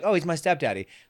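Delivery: sweet, nice, friendlier, kinder-sounding tone. Suggesting another way to say 'stepdaddy', in a nicer tone. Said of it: "you could even say it in a nicer tone, like".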